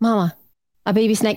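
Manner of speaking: put-on, mock-calm, even tone. Mother retelling her child announcing a baby snake on the bed: imitating a calm tone. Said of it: "did she say that calmly to you?".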